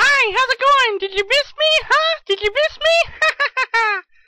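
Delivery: very high-pitched, piping voice. A video host switches to a put-on voice greeting himself: high-pitched voice. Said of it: "Why is he talking in a high-pitched voice now?".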